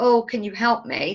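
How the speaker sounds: weepy, tearful, crying, pleading tone. Showing how someone crying asks a stranger for help: mock crying plea. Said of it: "you were crying and".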